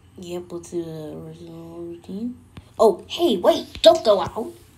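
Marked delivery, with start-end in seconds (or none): 2.8-4.5 booming, loud, high-pitched called-out line. Replaying the original Pokemon routine, the speaker does a Professor Oak impression. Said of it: "Like my Professor Oak impression".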